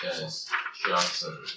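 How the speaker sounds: hushed, grim, breathy whisper. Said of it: "he says".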